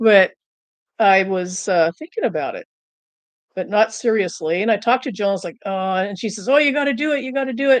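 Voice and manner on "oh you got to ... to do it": put-on, high, upbeat, eager, peppy cheerleading. Retelling how Jill urged trying carnivore: imitating Jill's peppy pep talk. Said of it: "really pep, with the pep talk".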